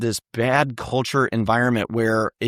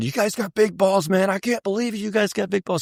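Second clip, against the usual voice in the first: put-on raised yelling, pitched up, over and over; 9 semitones higher than usual. Recounting what a man being taken to hospital kept saying, retelling a yell. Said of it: "he's yelling this the whole ride".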